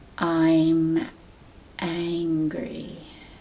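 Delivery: very slow, deliberate, drawn-out delivery. Saying a feeling aloud, the first of three times, very slowly. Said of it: "I'm going to say that very slowly".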